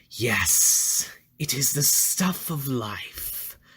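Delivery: very slow, darkly delighted, bubbling glee. The plant creature, having grabbed the vial, speaks: voice bubbling with dark pleasure. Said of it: "voice bubbling with dark pleasure".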